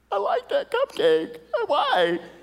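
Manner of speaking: high, weepy, tearful crying voice. Retelling watching a kid get voted off a cooking show: imitating own crying. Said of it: "and I'm crying. I'm crying".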